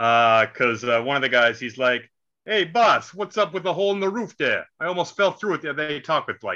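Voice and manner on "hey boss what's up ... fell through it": put-on workman's Brooklyn accent, pitched up. Retelling a construction worker's line from a movie: put-on Brooklyn accent. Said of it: "Brooklyn accents for some reason".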